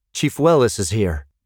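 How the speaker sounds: plain reading voice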